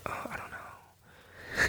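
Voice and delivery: slow, voiceless, helpless-sounding whisper.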